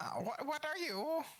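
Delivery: very high, birdlike talking-raven voice. Asked for your best impression of a raven, do the question as a raven impression. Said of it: "do your best impression of a raven".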